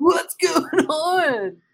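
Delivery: put-on surfer voice. Greeting a co-host in a joking manner: talking like a surfer. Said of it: "Why are we talking like surfers?".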